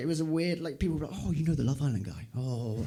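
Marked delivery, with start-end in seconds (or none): 1.2-2.9 oddly starstruck, impressed surprise. Retelling how people reacted on hearing who he knew: imitating someone weirdly impressed. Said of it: "weirdly impressed I knew him".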